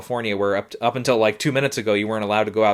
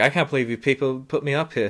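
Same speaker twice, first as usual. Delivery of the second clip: mock sardonic, dry, sarcastic, put-upon delivery; 3 semitones higher than usual. Retelling what he said about being put up there: imitating sarcastic delivery. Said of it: "sarcastic, uh, delivery there, where he's like".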